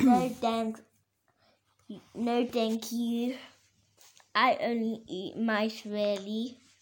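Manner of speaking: ordinary delivery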